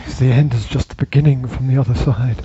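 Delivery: put-on ominous, foreboding voice. Replying to the other speaker's question, in an ominous voice. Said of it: "So your ominous voice".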